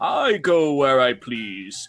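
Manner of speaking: voice of a talking horse. Casting an illusion so a horse seems to speak: talking horse voice. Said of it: "it now sounds like the horse is, is saying".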